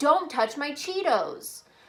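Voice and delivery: cross, angry delivery, pitched high. Example sentence in a punctuation lesson, said angrily. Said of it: "if I say this angrily".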